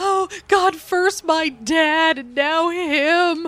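very slow, high-pitched, drawn-out wailing lament. Retelling how a comic character reacted to a death: imitating wailing. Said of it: "just wailing".

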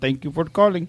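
put-on Indian accent. Retelling a call to a support line, quoting the agent in a put-on Indian accent. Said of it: "I'm just doing the accent".

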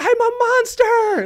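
very high, shrill, loud horror-movie scream. Retelling a woman at the speaker's office window, imitating a full-lung scream. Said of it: "screaming at the top of her lungs".

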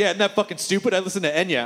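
ordinary talk

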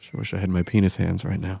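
speaking in a whisper. Talking into the microphone while another speaker cannot hear: whispering. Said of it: "I can't hear when you whisper".

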